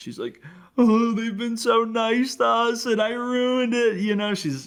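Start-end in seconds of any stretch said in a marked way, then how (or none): 0.8-4.0 high, slow, weeping voice soaked with tears. Retelling a woman crying after glass went everywhere, imitating her crying. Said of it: "she's she's crying".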